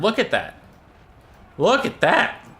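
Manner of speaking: voice breaking up, cracking very high. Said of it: "My voice cracked a little bit".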